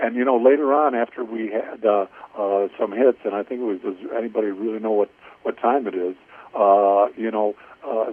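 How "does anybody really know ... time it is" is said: ordinary talk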